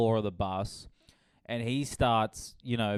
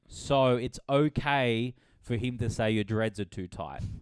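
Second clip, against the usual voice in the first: plain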